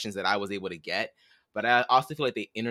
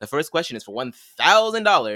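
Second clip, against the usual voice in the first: heavy stress on the word thousand; 5 semitones higher, 8 dB louder than usual. Imitating how she announces the first question, heavy stress on thousand. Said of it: "she always puts so much emphasis on the thousand".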